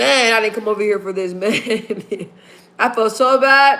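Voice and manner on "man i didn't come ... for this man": acted bawling, words sobbed through tears. Retelling own words said while bawling: imitating own past bawling. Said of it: "So I started bawling".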